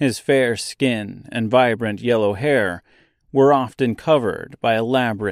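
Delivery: ordinary delivery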